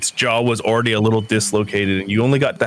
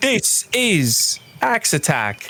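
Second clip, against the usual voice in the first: put-on pitched-up, swooping Australian-sounding presenter voice; 9 semitones higher than usual. Joking with the others over an axe attack roll, do an Australian-sounding Neil Buchanan impression. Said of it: "Is that your Australian accent?".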